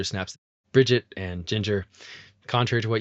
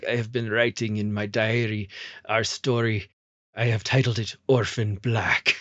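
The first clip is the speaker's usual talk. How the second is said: put-on Ukrainian accent; 3 dB quieter than usual. Retelling the series finale, Helena reads from her diary; Helena's Ukrainian accent. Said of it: "She's got like a Ukrainian accent".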